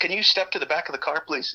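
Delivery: mock polite, firm authoritative tone. Retelling being pulled over, quoting the man who stopped him: imitating polite authoritative tone. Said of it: "he's being fairly polite, but also very authoritative".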